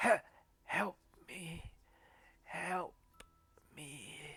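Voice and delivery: wounded, pleading, faint and breathy whisper. Describing a woman in the scene who beckons the listeners forward: whispering. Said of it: "like whispers".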